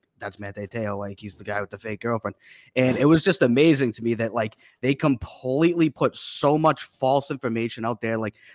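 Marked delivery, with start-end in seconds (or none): 0.2-2.4 soft, hushed, half-whispered aside. Retelling how people reacted on seeing him: imitating people half-whispering.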